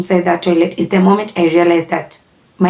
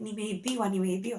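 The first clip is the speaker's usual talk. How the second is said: mock-sobbing, acted crying; 2 semitones higher, 18 dB quieter than usual. Retelling talking to a stranger on a borrowed phone: retelling crying. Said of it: "I'm crying and I'm crying and I'm like".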